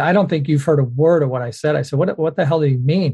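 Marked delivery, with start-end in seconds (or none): none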